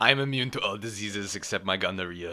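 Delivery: odd, weird-sounding Swedish accent. Saying a line the speaker can't explain, in an odd Stockholm accent. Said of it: "Was that supposed to be your Stockholm accent?".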